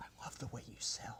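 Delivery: soft unvoiced whisper under the breath. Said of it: "under his breath".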